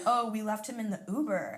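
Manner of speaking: ordinary talk, nothing marked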